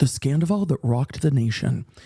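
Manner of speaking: grand, dramatic movie-trailer narrator voice. Starting tape two of a recording: dramatic voiceover voice. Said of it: "the dramatic voiceover voice".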